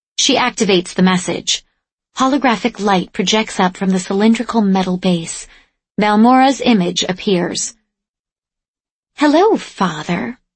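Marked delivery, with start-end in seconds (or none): 9.2-10.4 brittle, patronizing, condescending tone. A dead daughter's holographic image greets her father, in a brittle, condescending tone. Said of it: "she says in a brittle, condescending tone".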